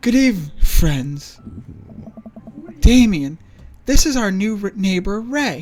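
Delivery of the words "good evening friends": put-on gothic vampire voice. Narrating a story, voice the vampire guy's greeting in a vampire voice. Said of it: "I don't have a good vampire voice".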